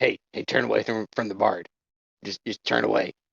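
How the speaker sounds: low, hushed half-whisper. A player speaks as her character, quietly telling him to turn away: half-whispering. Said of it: "she whispers to his crotch".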